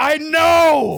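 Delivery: very high, loud, furious yell, "know" stretched. Retelling how grandpa answered after being told "I didn't do anything": imitating grandpa yelling. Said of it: "he yelled back".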